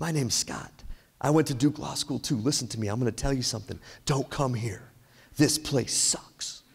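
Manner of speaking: put-on whispering. Retelling how a guy whispered in a bathroom during an interview: imitating someone whispering. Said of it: "he starts to whisper".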